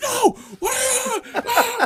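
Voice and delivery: very high, drawn-out, aggressive, rude, acted-out angry yell. Retelling how a man shouted at their car: imitating someone yelling. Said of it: "the dude is yelling like".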